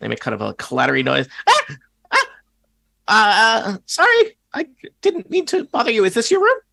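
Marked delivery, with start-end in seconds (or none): 1.5-6.5 very high, swooping, startled creature squeak. Voicing a kobold caught working on a lock: kobold character voice. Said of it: "the kobold, uh, drops, uh, all of his little tools".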